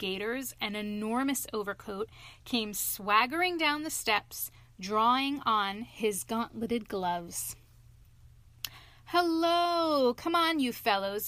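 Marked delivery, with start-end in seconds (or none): 9.0-11.3 bright, hearty, cheerful high cry, hello drawn out. A man comes down the steps greeting his friends; cheerful cry. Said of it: "he cried cheerfully".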